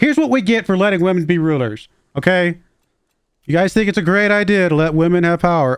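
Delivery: high, heavy, plainly kidding sarcastic tone. Joking while assigning council tasks in a game: mock sarcasm. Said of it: "Being very sarcastic".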